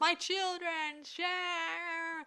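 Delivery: yelled out high and slow.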